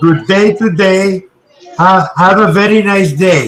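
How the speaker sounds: put-on Pakistani accent, tongue against palate. Showing a conversation partner how to sound Pakistani: imitating a Pakistani accent. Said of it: "the secret to sound like a Pakistani man".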